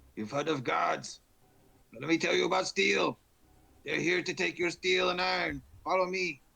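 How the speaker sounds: very high, rough, loud rallying yell. Rallying spearmen in character before a fight: yelling to spearmen. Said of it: "I'm gonna yell to my spearmen here".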